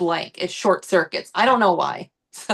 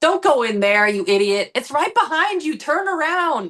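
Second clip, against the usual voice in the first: play-acted high, frustrated, exasperated yelling shout; 8 semitones higher than usual. Retelling yelling at horror movie characters: imitating yelling at a horror movie. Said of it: "I've also yelled at horror movies".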